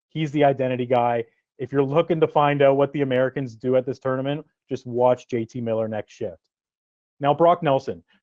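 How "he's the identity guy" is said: usual speaking voice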